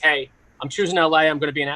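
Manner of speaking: ordinary talk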